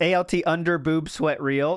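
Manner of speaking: plain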